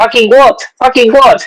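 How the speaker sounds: play-acted, very high yelled shout. Recounting an argument with another man, repeating what he yelled back: retelling own past shout. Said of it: "yo empecé a gritar".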